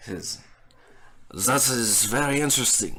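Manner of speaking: put-on slipping into French accent. Voicing a character in the game, slipping into a French accent. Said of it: "I'm slipping into French here".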